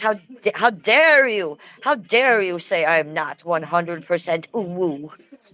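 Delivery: voice of a talking pet dog. Speaking for the French bulldog to the viewers: voicing Annabelle the dog. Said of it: "She says".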